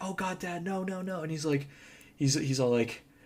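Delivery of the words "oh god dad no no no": crying, high, slow, tearful, panicked voice. Retelling a movie scene where the daughter's dad is shot: imitating someone crying and freaking out. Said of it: "crying and freaking out".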